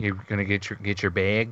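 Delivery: imitation Minnesota accent. Announcing it first, the speaker does a mock Minnesotan accent. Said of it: "that's the word you want to make fun of Minnesotans with".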